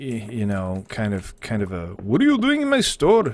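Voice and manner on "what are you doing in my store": cartoon Indian accent, pitched very high. Trying an Indian accent that someone requested: Simpsons Indian accent. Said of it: "I'm just gonna fall directly into the Simpsons".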